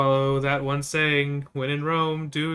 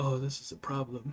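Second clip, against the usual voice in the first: muttered quietly under the breath, quieter; 10 dB quieter than usual. Walking back to a companion, saying it under the breath. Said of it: "just under my breath".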